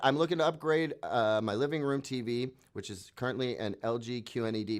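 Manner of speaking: ordinary talk, nothing marked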